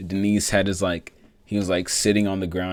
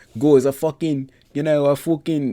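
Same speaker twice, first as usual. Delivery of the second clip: perfect put-on English accent, pitched up; 8 semitones higher, 4 dB louder than usual. Retelling a Portuguese speaker's rough English translation on the mic; English accent. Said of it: "came up with the perfect English accent".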